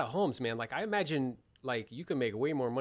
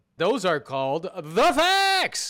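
very loud, pitched-up proclaiming voice; 6 semitones higher, 10 dB louder than usual. Asked for a quick impression, doing Jim Rohn impression. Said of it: "Can you do a quick Jim, Jim Rohn impression?".

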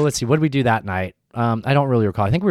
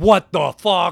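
put-on high, stupid-sounding Connecticut accent; 6 semitones higher than usual. Retelling how a man reacted when his accent was guessed, in a stupid Connecticut voice. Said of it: "In that stupid Connecticut voice".

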